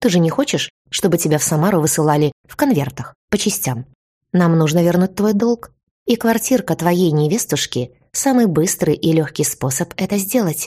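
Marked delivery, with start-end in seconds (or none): none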